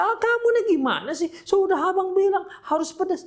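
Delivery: put-on shrill, furious yelling, very high. Acting out a husband complaining the food lacks chili: acting a husband yelling angrily. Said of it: "Ngapain teriak-teriak?".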